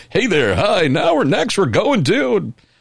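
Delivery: affected, polished, slick, swooping announcer voice. Host demonstrating an affected voice for opening the show. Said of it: "i could put on that affected voice".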